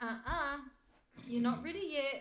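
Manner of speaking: tiny, small, high-pitched little voice. Imagining a character speaking inside one's head: little tiny voice of Ormus. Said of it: "in a little tiny voice in my head I heard Ormus".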